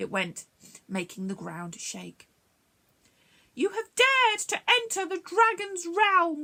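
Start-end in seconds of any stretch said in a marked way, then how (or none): 3.5-6.4 loud, very high, roaring dragon monster voice. A narrator reading a story aloud voices the dragon's line, roaring dragon voice. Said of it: "roared the awesome monster".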